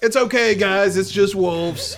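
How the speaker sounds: very loud holler across the room. With wolves snarling behind the hut, a player's character yells to the group. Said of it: "I just yell".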